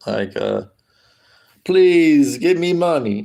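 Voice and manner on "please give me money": Serbian-accented speech. Answering a request to play a Serb begging for money: attempted Serbian accent. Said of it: "Can you do a Serb impression on the street begging for money?".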